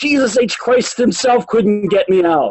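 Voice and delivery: mild mock yell, light and bragging. Reading aloud from a book about a ballplayer psyching himself up: imitating Ted Williams screaming. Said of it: "start screaming at the top of his voice".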